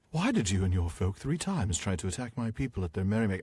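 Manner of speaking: snooty, haughty, slightly grating tone. Reading a character's question in a voice that is haughty and annoying. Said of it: "make him sound kind of haughty and a little annoying".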